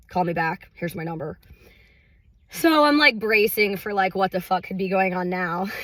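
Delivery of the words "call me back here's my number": super monotone, flat, uninflected delivery. Retelling a voicemail asking for a call back, imitating Sam's super monotone. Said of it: "just super monotone".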